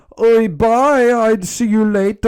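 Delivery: put-on botched Scottish accent, very shrill and very high. Retelling a brother letting go in a balloon scene, bad Scottish accent. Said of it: "I can't do a Scottish accent".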